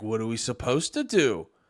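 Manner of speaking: very deep, low put-on mocking caricature voice. Mocking what a group always says, slipping into a mocking caricature voice. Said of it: "I didn't mean to do the voice".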